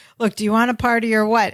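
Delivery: put-on annoyed, irritated tone. Retelling a scene where a woman gets annoyed with Balky, mock-annoyed. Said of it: "she gets annoyed and she goes".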